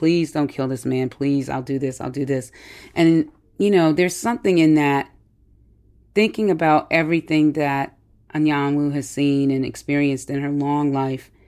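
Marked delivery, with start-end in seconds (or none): 0.0-2.5 acted desperate pleading. Describing a scene where a character pleads with someone, acting out pleading. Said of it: "She is just pleading".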